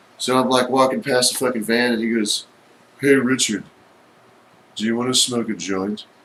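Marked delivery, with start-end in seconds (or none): 3.0-6.1 flat, level, unvarying monotone drone. Retelling a man offering a joint from his van, imitating Craig Kin's monotone. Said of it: "he talks so monotone".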